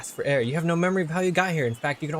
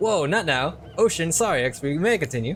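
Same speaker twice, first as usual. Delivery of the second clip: usual speaking voice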